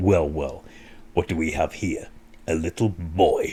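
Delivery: very low, hushed, soft, sinister, menacing. Retelling a film scene where the giant villain confronts young Tom Cruise, sinister Tim Curry impression. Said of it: "how sinister he can be".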